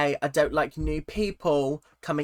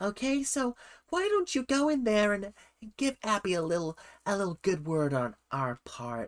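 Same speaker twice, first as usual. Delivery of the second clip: put-on woman's voice, higher and quieter; 4 semitones higher, 5 dB quieter than usual. Putting on a voice to imitate Jill pushing her daughter forward: Jill impression. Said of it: "my nine hundred voice on".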